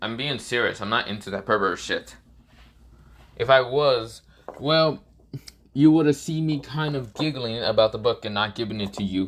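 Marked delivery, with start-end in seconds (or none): none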